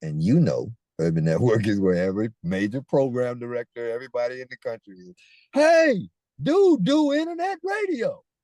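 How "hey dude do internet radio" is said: shrill, very high, drawn-out scream. Telling a story, acting out how a man turned and screamed at a network. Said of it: "turned around and screamed at Urban Network".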